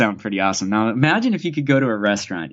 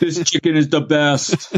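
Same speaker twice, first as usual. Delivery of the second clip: put-on boastful voice, higher; 5 semitones higher than usual. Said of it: "And she sounds like Trump".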